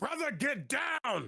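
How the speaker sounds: very high, screamed-out cry. Voicing a character warning his brother during a fight: screaming out. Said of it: "he just screams out".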